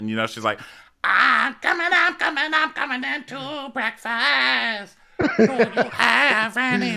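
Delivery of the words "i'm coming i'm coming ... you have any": croaky crow-like voice, very high and very slow. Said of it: "[name] does not sound like a crow".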